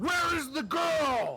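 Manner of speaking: biggest, loudest, scary voice. A player speaking as a god to an orc, booming, scary god voice. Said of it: "the biggest, loudest, booming, scary voice I could come up with".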